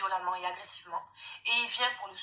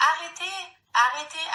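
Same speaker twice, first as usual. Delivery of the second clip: put-on high, very loud little-girl voice crying out; 8 semitones higher, 10 dB louder than usual. Retelling a daughter's cry during a fight: imitating a child's small voice. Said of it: "avec sa petite voix".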